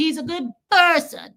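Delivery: low-key dog voice. Retelling chatting with the dog at the vet: bo voice. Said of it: "I was just doing my Bo thing".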